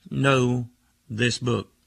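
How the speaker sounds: slow, very emphatic, leaning on every word. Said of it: "he said very emphatically".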